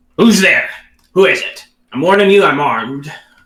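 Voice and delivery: rough dwarvish call. Game master voices someone calling out behind a rusty door; very gruff voice. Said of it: "very gruff voice kind of calls out".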